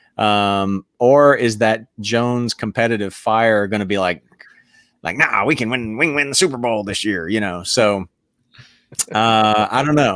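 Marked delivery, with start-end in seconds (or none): 5.1-7.3 put-on Texan accent, faster pace. Speaker voices Jones's competitive fire about winning this year, Jones in a Texan accent. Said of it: "That's my little old Texan accent".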